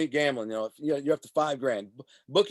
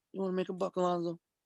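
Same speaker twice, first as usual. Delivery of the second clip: quiet, half-whispered voice; 3 semitones higher, 7 dB quieter than usual. Retelling how someone leaned in with an offer: imitating Tony half-whispering. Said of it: "and whispers".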